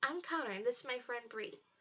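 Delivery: ordinary delivery, nothing marked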